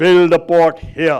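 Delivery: deep, slow, commanding put-on voice of authority. Speaker acting out a government directing its minions to build a port, deep voice. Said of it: "in a deep voice by saying".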